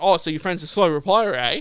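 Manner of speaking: condescending, dismissive, talking-down sarcastic tone. Retelling what a shop worker said: imitating a condescending sarcastic tone. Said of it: "he was condescending, sarcastic, like, like, like, really dismissive".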